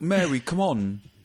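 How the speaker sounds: high, put-on street London accent. Describing an actor's role in a British TV show, doing a street Michael Caine impression. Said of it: "talks like a like a kind of uh, street Michael Caine".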